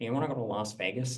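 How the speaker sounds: full-on, extremely nerdy, geeky voice. Retelling a caller phoning at two a.m., in an extremely nerdy voice. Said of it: "extremely nerdy voice that comes on and he goes".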